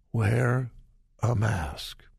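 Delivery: flat, level, unenthusiastic throwaway delivery. Quoting a man's last words before walking away, imitating a flat, unenthusiastic delivery. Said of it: "he said it with about that much emphasis and enthusiasm".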